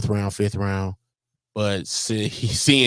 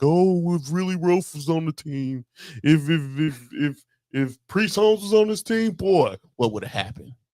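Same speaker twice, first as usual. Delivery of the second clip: mocking, scoffing, higher-pitched derisive sports-fan voice; 7 semitones higher than usual. Mocking how fans of the other team talk: imitating a Chiefs fan. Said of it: "y'all be like".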